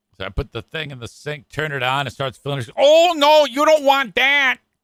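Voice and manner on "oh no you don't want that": put-on sweet Michigan accent, high and slow. Retelling what an office worker at the radio station said: imitating a sweet Michigan accent. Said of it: "She's got a sweet Michigan accent".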